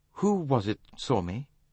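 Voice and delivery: curious, inquisitive. Tim asks Poirot who it was that saw him, curious. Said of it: "Tim asked curiously".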